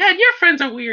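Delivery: clumsy, bad, very high-pitched daughter voice. Imitating a daughter talking about her dad's friends: bad high-pitched impression of daughter. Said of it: "a bad impression of her".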